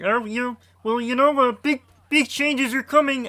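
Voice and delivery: high-pitched cartoon frog-puppet voice. Complaining about what a game company promises: Kermit the Frog voice. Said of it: "I did the Kermit the Kermit the Frog voice there".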